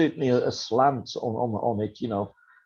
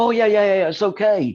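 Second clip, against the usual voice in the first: high, loud, sudden cheerful reassuring tone. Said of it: "And they sort of go".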